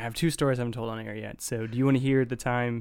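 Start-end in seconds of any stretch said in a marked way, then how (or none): none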